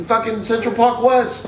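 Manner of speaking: ordinary talk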